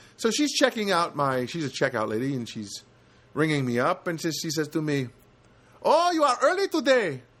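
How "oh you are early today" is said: poor put-on Filipino accent, much higher pitch. Retelling what a checkout lady said while ringing them up, in a not-great filipino accent. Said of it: "I don't do a great Filipino accent, but I will do a simulation of one".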